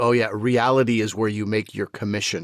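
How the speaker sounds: put-on sarcastic tone. Retelling their reaction to a line about reality back home: imitating own sarcastic retort. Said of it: "a much more sarcastic version".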